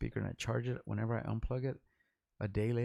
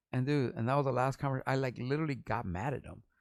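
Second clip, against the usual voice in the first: plain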